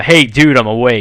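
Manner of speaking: yelling out. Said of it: "So I yell out".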